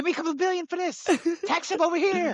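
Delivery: very high, fast, squeaky bossing voice. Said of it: "he's telling Kathy".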